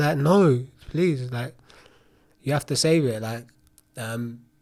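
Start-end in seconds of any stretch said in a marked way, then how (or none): 0.2-3.2 put-on, high, raised, desperate pleading through tears. Speaker retells crying and begging them to save it, retelling tearful begging. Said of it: "I was begging them".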